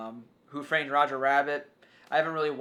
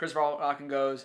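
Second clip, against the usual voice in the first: ordinary delivery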